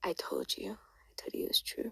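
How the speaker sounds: soft, whispered delivery.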